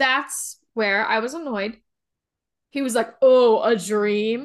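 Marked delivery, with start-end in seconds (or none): 3.2-4.4 loud, mocking, heavily sarcastic disbelief. Recapping a show, acting out Locke answering Echo, mimicking Locke's sarcasm. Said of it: "He was very sarcastic about these dream comments".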